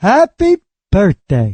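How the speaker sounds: swooping put-on snowman character voice. Showing the listeners an impression: Frosty the Snowman voice. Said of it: "Have I ever done my Frosty the Snowman for you?".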